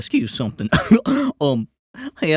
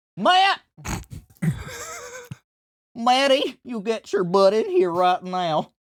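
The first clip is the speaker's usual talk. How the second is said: put-on Southern accent, pitched up; 9 semitones higher than usual. Calling someone into the room, in a Southern accent. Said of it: "he got like Southern for a second".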